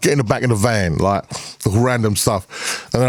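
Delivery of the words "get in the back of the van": put-on East London Cockney accent. Retelling vocal samples recorded for a record: put-on cockney accent. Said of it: "I did one all Cockney stuff".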